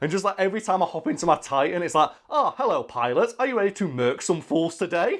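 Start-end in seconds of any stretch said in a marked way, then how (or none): 2.3-5.2 put-on, polite English butler voice, British accent. Describing the game's Titan greeting the player, in a British butler Titan voice. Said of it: "I always pick the British butler".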